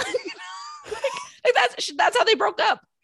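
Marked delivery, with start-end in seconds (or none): 1.4-2.8 high, loud laughing mock wail. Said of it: "cry shout".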